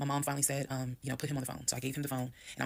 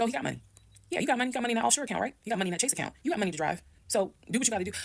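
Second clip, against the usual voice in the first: furious, pitched-up angry shouting in the background; 9 semitones higher, 4 dB louder than usual. Retelling what she yelled in the background at her husband, retelling a yell. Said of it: "I'm yelling".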